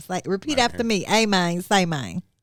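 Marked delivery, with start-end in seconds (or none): 1.1-2.2 Memphis accent with a slower delivery. Host teaches KB a catchphrase to repeat after him, Memphis accent. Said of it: "It's some real Memphis stuff".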